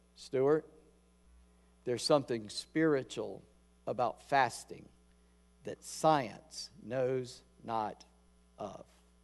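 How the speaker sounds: put-on grand, lofty, formal, old-fashioned delivery. Retelling what a doctor said about fasting: imitating Doctor Burchett's formal speech. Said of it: "He talked like that".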